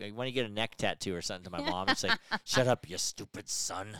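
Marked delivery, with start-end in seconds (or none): 2.4-3.9 slow, mumbled, muttered under the breath. Podcaster retelling what their mom said to them on the podcast, imitating a mumble. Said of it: "She kind of like mumbles it".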